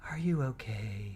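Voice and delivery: soft, quiet, overly pious churchy murmur. Retelling a courtroom question to a crying witness: imitating a pious quiet voice. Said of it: "in his most pious, quiet voice that he can".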